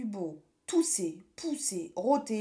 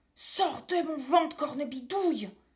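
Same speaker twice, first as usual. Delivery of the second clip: sudden, high, cried-out exclamation; 6 semitones higher than usual. Narrating a story, a character calls out to a witch: cried out. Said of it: "s'écria Pierre".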